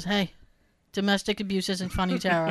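very serious, dead earnest tone, no joking. Retelling what the person she was dating said after she hit him: imitating Jay, very serious. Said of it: "he looked at me very serious, and he goes".

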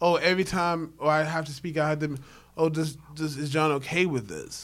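ordinary delivery

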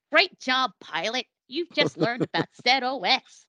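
horrible, clumsy put-on American accent. Quoting a training course's voiceover, in a horrible american accent. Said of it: "a horrible American accent would be like".

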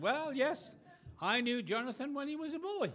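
put-on English accent. Speaker applies someone's old remark to Jonathan, in an English accent. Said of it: "I could say with the English accent tonight".

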